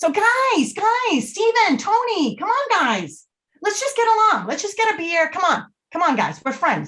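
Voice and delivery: very high, soothing, sing-song voice. Demonstrating how to break up two arguing friends, in a high-pitched voice. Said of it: "a high pitched voice is great when dealing with conflict".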